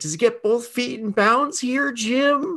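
very high, slow, drawn-out call. Retelling a sportscaster's call about a cat on the field: Tony Romo voice. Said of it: "the call that he made with".

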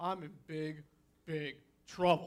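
put-on low, soft, sheepish kid voice with a grin. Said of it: "with that little, that kid grin".

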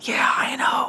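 whispered voice. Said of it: "whispering to each other".

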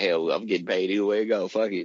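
ordinary delivery

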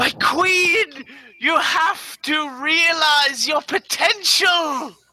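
very high little lizard yell, "queen" drawn out. Narrating a game, voicing a bleeding lizard calling out to a player, shouting. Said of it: "you hear it shout out to you".

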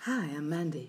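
put-on seductive, sultry late-night radio voice. Introducing yourself round the room on a podcast: put-on sexy voice. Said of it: "I didn't know we were doing it in sexy voice".

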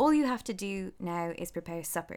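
plain

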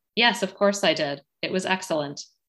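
mock expressionless, flat deadpan tone. Recounting a scene, quoting a wife's reply to her husband, retelling a deadpan reply.

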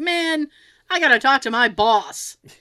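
slow, fed-up, vexed complaining tone. Retelling a drive-thru worker's reaction: imitating a vexed worker. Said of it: "he's absolutely vexed".

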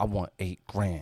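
play-acted, low, quiet, dead-serious, unflinching tone. Retelling how a little kid asked for money: imitating a kid saying it seriously. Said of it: "he was serious, like he had a plan".

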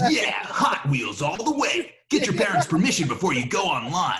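animated, grown-up cool-guy announcer voice. Recreating a kids' commercial he voiced, the speaker shows the voice: adult cool guy voice. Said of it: "an adult cool guy voice".

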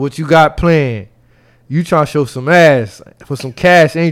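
ordinary delivery

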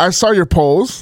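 mock condescending, patronizing tone. Retelling what another speaker said about polls: imitating a condescending tone. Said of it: "She said".

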